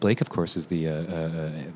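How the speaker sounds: low, soft, odd-sounding voice. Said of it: "Why am I talking like this?".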